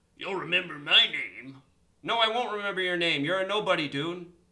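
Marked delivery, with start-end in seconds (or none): 0.2-1.6 mock hillbilly accent with drawl. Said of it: "with his hillbilly accent".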